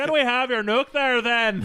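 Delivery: bad fake Canadian accent, loud. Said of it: "Oh, it's so bad".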